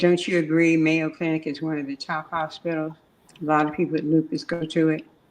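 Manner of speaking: normal talking voice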